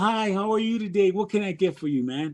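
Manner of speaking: said with a smile. Demonstrating how to greet someone walking up for food, smiling greeting.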